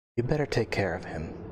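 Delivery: whispering softly. Voicing a character as the player stands to leave: whispering softly. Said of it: "she just whispers out softly".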